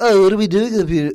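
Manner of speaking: put-on British voice. Mocking actors playing dinosaurs hanging on wires, in a mock British accent. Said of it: "with their British accents".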